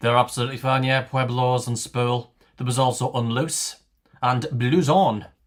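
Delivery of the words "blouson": blouson pronounced the French way, French accent. Reading out a list of valid words: french accent on blouson. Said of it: "I don't know why I'm saying that in a French accent".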